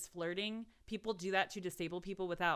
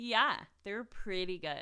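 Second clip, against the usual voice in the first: unconvincing, insincere, fake-sounding put-on tone; 4 dB louder than usual. Co-host agreeing when asked about the good Instagram picks; fake-sounding agreement. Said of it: "That was the fakest way you could have said that".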